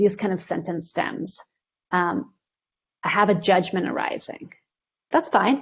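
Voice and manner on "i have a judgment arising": ordinary talk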